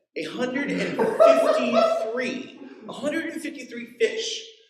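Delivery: high, slow, laughing amazed disbelief.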